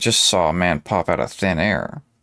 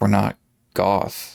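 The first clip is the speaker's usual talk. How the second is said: hushed whisper. Reading a story aloud, Lilith answers a visitor: whispering. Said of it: "Lilith finally whispered".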